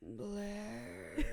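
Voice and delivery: intense, loaded delivery. Showing how Chuck speaks so intensely: imitating Chuck's intense voice. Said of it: "has to so intensely speak like this".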